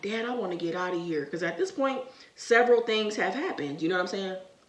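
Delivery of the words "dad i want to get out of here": play-acted bawling, crying out through tears. Retelling a frightening night, begging a father to leave: retelling own crying plea. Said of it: "I'm bawling, like, I'm crying".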